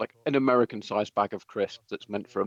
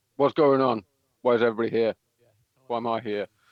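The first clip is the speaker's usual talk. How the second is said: speaking around a mouthful of crisps; 4 dB louder than usual. Retelling how Thomas walks in eating crisps and speaks, mimicking a mouthful of crisps. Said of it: "with a mouthful of crisp goes".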